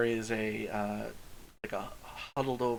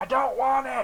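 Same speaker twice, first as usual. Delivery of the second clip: hoarse, raspy, shrill, very high, very loud yell; 14 semitones higher, 9 dB louder than usual. A character behind a door answers a delivery knock, in a raspy voice. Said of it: "you hear a raspy voice go".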